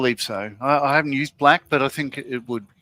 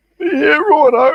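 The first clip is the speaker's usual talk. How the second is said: fake posh accent, higher pitch and louder; 14 semitones higher, 10 dB louder than usual. Asked by another speaker to do a best posh voice: put-on posh voice. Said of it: "get your best posh voice on".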